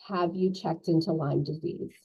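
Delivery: put-on very quiet, hushed voice. Retelling a nurse's question on the phone: imitating a very quiet voice. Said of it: "very quietly in the phone".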